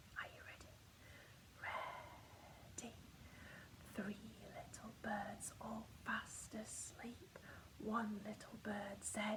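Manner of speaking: soft, quiet storytime whisper. Leading children in a rhyme about birds going to sleep, in a quiet voice. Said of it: "Remember to use your quiet voice".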